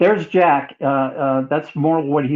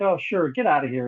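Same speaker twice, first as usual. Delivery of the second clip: put-on sneering, quieter; 5 dB quieter than usual. Retelling how the host answered requests from people who sent mail: imitating someone mocking. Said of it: "he would make fun of people".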